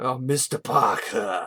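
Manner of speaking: British villain voice. Speaker complaining how a film character talks, mocking him: the Lizard as Bond villain. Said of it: "talking like he's some stereotypical Bond villain".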